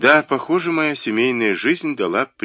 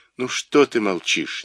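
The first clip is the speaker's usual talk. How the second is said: plain reading voice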